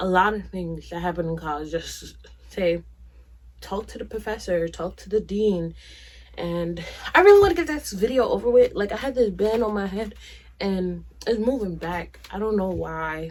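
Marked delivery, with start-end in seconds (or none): 6.4-8.7 quick, hurried speech. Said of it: "if I'm talking fast".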